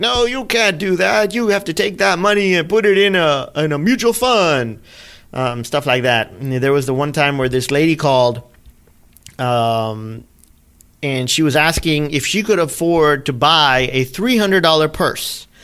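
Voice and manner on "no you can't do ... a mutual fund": hard, stern, no-nonsense scolding yell. Retelling a radio host scolding a caller: imitating someone yelling. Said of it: "she'll be yelling at him like".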